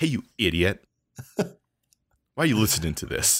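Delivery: intimidating, menacing tone. Voicing a podcast bit aimed at listeners, making it very threatening. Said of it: "You just make it very threatening".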